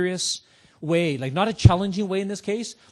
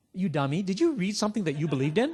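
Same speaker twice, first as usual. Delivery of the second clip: condescending, talking-down, you-dummy tone. Showing how to question a customer about bad reviews: imitating a "you dummy" tone. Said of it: "I say it in a tone like".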